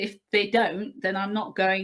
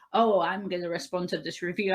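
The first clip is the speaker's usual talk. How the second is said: mock-arrogant put-on voice. Speaker mocking authors who respond to book reviews, mock-arrogant author. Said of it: "I just find it incredibly arrogant when people go".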